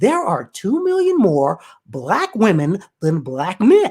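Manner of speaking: slow, careful, deliberate put-on voice.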